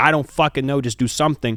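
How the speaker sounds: urgent yelling with swearing. Recounting a best friend dying at a loud concert, retelling a yell at a brother. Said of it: "I'm yelling at my brother saying".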